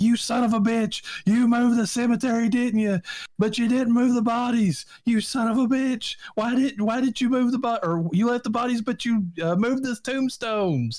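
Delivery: very high, shrill, loud screaming. Retelling a movie scene where a father screams at Teague: imitating Craig T. Nelson screaming. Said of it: "when he's screaming at Teague".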